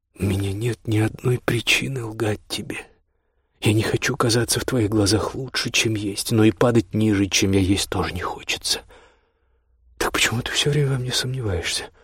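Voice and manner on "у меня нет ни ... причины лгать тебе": usual speaking voice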